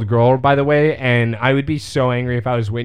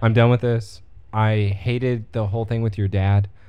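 ordinary delivery

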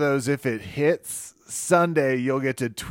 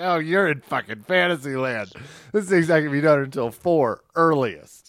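ordinary delivery

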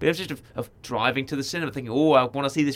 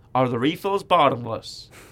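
put-on tried-out American accent. Retelling trying out an American accent at the table, in an American accent. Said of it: "I can say that in my American accent".

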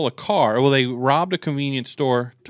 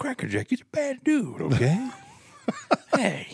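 put-on soft, swooping, sing-song old man voice; 8 semitones higher, 5 dB quieter than usual. Riffing on someone's favourite sayings with friends, putting on an old man voice. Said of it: "It's an old guy".

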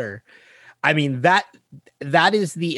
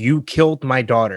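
angry screaming; 2 semitones lower than usual. Retelling a scene where a character stabs a man: imitating Ben Linus screaming. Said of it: "and he's screaming".

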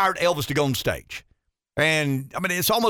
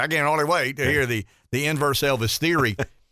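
ordinary talk

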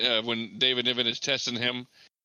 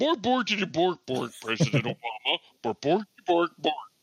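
pitched-up nonsense gibberish; 5 semitones higher than usual. Imagining the Swedish Chef interviewing a serious guest: Swedish Chef voice. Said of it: "He'd be like".

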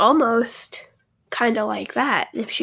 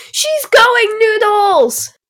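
shrill, very high, very loud yell; 12 semitones higher, 9 dB louder than usual. Retelling what Grant called out when the dog went crazy: imitating a yell. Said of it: "Grant just immediately called out".

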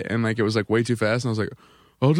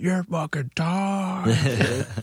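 acted, drunken slurred yelling from afar; 6 semitones higher than usual. Retelling a crowd heckle from a hammered guy: imitating a drunk guy yelling. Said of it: "some hammered guy being like".

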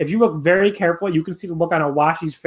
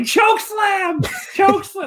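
shrill, high, excited, pitched-up commentator yell. Recapping a wrestling match, retelling Antonio Honda's yell from commentary. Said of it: "who just yells out like".

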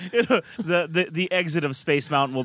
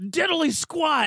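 put-on angry yell, very high; 10 semitones higher than usual. Retelling how a wrestler yelled in a video: Road Warrior Hawk angry yell. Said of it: "he's all pissed off, yelling".

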